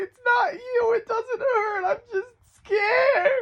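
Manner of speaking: very high, loud sobbing through the words. Retelling crying while someone struggled to find a vein; imitating own crying.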